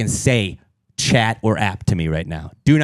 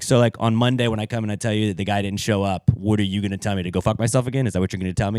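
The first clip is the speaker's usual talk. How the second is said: normal talking voice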